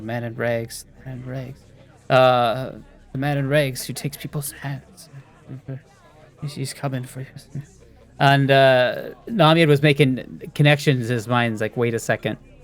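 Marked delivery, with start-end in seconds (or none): 0.0-7.3 soft, hushed, repetitive mumbling under the breath. In a tabletop game, the skulk sits there mumbling. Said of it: "he's just sitting there mumbling".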